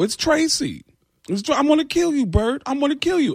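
comic voice pitched way up. Retelling a prank call, threatening Bert in a Tracy Morgan voice. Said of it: "I was gonna kill him as Tracy Morgan".

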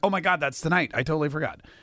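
ordinary talk, nothing marked

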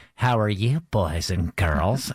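slow, direct speaking manner. Retelling how the TV host seemed to talk directly to viewers: imitating Mister Rogers. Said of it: "the way that he looks at the camera, he's like".

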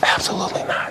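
hushed, whispering voice. Answering whether laws were broken regarding women: whispering. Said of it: "why do you whisper that?".

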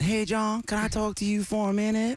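put-on southern US accent. Recounting when his English teacher approached him, doing Polly Lowry's southern accent. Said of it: "She had a southern accent".

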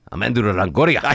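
very heavy, thick put-on Spanish accent. Retelling how he introduced himself to a guy; heavy Spanish accent. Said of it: "in the heaviest Spanish accent I've ever heard him use".

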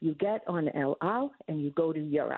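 put-on Israeli-accented speech. Quoting a friend's reply when asked for advice, heavy Israeli accent. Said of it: "in a very heavy, wonderful Israeli accent".

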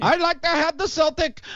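put-on high-pitched, slurred, drunk Irish brogue. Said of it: "he's slurring his words 'cause he's drunk".

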